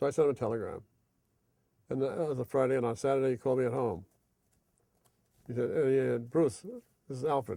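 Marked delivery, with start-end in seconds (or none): 5.7-7.6 put-on faint, weak voice with a German accent. Retelling a phone call from Alfred Lion: weak voice with German accent. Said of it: "some weak voice, but German accent there".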